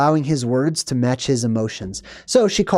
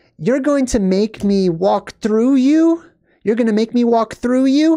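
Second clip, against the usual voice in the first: put-on high, babyish, childlike voice; 9 semitones higher than usual. Retelling a woman's words to a man who won't let her through, in a baby voice. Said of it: "she says it in this kind of baby voice".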